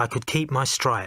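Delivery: plain reading voice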